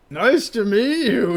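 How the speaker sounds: thick, slow, loud, drink-sodden slurring. Roleplay narrator voices a drunk man greeting the listener, drunk slurring Barney voice. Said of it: "he slurs with his voice thick with drink".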